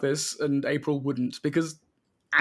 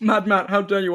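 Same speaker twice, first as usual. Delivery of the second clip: talking with mouth full, higher and louder; 4 semitones higher, 4 dB louder than usual. Reacting while eating pizza, talking with food in mouth. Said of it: "I have food in my mouth".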